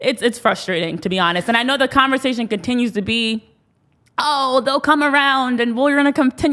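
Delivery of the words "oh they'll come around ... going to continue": put-on old woman's granny voice. Mocking the ongoing conversation about the team, in an old woman's voice. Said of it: "I don't know why I'm in an old woman's voice right now".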